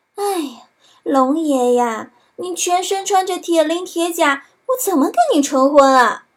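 sugary, coy, sweet, flirtatious, coquettish voice. Narrator reading a tale, a character pretending to obey the dragon speaks coyly sweet. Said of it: "他娇滴滴地说".

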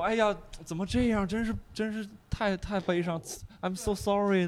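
put-on, empty, hollow sympathetic consoling tone. Imitating the kind of person who offers hollow sympathy: imitating hollow sympathy. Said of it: "我特讨厌是那种".

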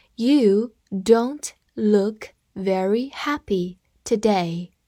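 very slow, drawn-out, word by word reading.

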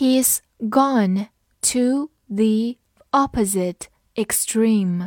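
slow, drawn-out read-along delivery.

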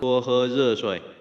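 warm gentle male voice, soft and slow.

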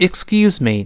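loud, read-aloud delivery. A teacher has the class repeat the phrase together: reading aloud loudly. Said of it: "跟老师大声再读一遍".

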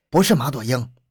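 ordinary delivery

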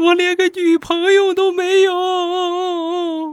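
mock pitiful wailing sob, very high, very slow, drawn out. Retelling a drunk roommate's words as he cried: imitating miserable crying. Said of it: "然后下一瞬哭得更凄惨了".

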